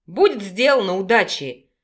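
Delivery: plain reading voice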